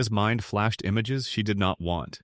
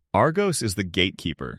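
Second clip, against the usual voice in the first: ordinary delivery, nothing marked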